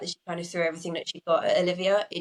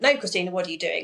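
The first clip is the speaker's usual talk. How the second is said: strong, stern scolding telling-off tone. Retelling what was said to the midwife: imitating a telling-off voice. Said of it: "in a very telling off voice".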